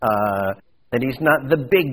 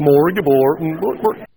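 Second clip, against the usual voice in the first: put-on Swedish chef voice; 3 semitones higher, 5 dB louder than usual. Explaining two Hebrew words, the speaker repeats a phrase as a Swedish Chef impression. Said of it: "that sounded like a Swedish chef".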